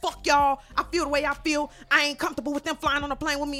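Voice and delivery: mock stubborn, defensive tone. Retelling a woman's reply to people calling her racist: imitating her defensiveness. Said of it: "she was real defensive".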